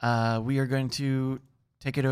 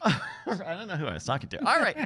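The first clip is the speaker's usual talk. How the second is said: ordinary delivery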